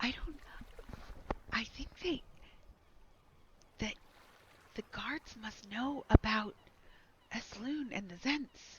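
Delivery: hushed, secretive whisper. Voicing a woman whispering a secret to another: whispering. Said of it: "two females ten feet away from you are whispering".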